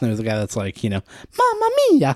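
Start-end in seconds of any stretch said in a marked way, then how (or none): 1.4-2.2 very high, loud, silly cartoonish voice. Recalling a guy in a video game, the speaker quotes him, Mario voice. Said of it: "he's doing the Mario voice".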